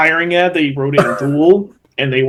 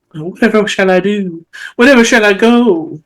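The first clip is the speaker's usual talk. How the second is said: high, ladylike Southern belle voice; 7 semitones higher, 3 dB louder than usual. Imagining how a lady sounded: Scarlett O'Hara voice. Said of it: "I like to imagine it's the, uh, Scarlett O'Hara".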